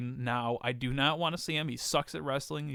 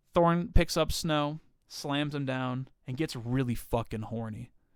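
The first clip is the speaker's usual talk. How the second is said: plain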